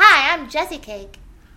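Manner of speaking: loud cute cartoon voice. Demonstrating how the Shopkins cupcake character talks, in Jessicake Shopkins voice. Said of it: "she talks like this".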